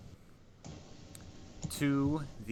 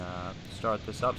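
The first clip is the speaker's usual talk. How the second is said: ordinary delivery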